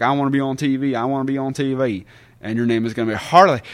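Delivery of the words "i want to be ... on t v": slow southern drawl accent. Retelling a planned wrestling character, showing a southern drawl. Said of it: "a bit of a southern drawl like this".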